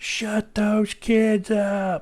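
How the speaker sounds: very high, very slow, shrill, drawn-out yell. Retelling a neighbor yelling at kids playing outside: imitating a neighbor yelling.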